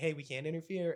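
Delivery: ordinary talk, nothing marked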